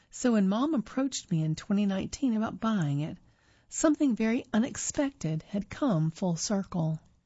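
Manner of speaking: ordinary talk, nothing marked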